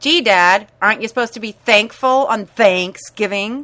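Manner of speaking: loud, snide mutter. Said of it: "snidely mutter".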